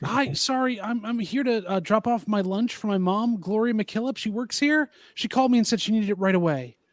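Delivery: charming coaxing tone. Playing a character asking a guard to be let inside, charming and sweet-talking. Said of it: "I'm gonna try to charm him".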